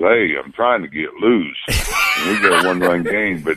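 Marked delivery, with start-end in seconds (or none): 0.0-1.6 put-on southern drawl. Retelling a pitcher's reply when asked if he's all right, Bumgarner southern drawl. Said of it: "with his southern drawl".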